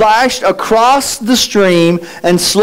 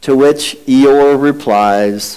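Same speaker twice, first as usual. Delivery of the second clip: ordinary talk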